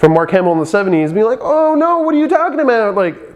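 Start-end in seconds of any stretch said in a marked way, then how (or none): 1.4-2.9 very high, whiny complaining voice. Describing hearing Star Wars characters while reading the book: whiny, complaining Luke voice. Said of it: "in his little whiny, complaining voice".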